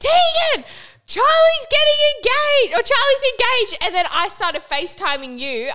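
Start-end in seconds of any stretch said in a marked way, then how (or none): 0.0-3.8 shrill, very high, loud, full-on screaming shriek. Retelling jumping out of bed to tell the listener the news: retelling a scream. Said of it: "I screamed".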